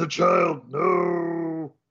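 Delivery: caveman voice with long, drawn-out "no". Narrating a fight scene, voicing the caveman as a punch nearly hits a child: caveman voice. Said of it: "And the caveman goes".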